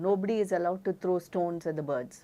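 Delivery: ordinary delivery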